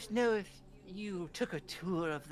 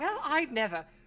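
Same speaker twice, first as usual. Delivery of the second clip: startled, caught off guard, pitched-up exclamation; 8 semitones higher, 4 dB louder than usual. Voicing a character startled after being told to shut up; startled. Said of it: "she uh looks startled and she's like".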